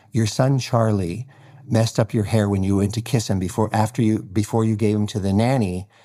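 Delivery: ordinary delivery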